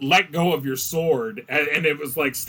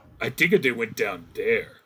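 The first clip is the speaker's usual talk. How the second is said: monster orc voice; 4 semitones lower than usual. Voicing orcs heard from behind the party: voicing orcs. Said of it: "you hear from behind you".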